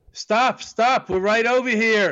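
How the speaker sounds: high, mild mock yell, called out.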